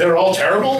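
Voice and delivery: ordinary talk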